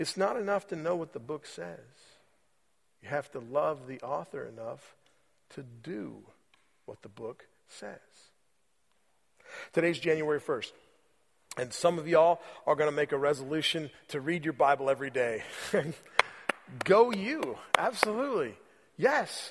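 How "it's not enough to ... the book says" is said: soft, close whisper, leaning in. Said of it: "he'd whisper in your ear".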